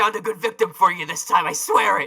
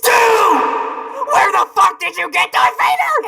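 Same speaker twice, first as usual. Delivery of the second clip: shrill, very high, loud, enraged, furious yell; 5 dB louder than usual. Shown Stu's present, [name] responds shouting at Stu. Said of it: "why are you shouting at me?".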